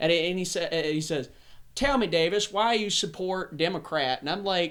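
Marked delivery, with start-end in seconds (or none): 1.7-4.2 put-on Southern accent. Retelling a phone call with a man from the south: imitating a southern accent. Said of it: "People talk like this".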